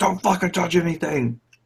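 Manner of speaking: mock panicked, high, freaked-out swearing. Speaker retelling a dad's reaction to a fake ice cube prank, imitating dad freaking out. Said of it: "freaked out and made us all put our cups down".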